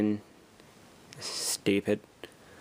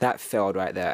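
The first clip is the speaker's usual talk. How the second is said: plain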